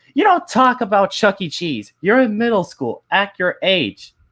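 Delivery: mock stern, high-pitched scolding outburst, teacher-like. Retelling a teacher scolding the class: imitating teacher yelling. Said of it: "she started yelling like this".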